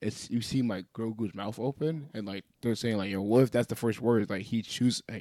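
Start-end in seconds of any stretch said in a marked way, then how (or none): none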